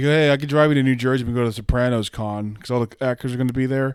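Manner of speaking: ordinary talk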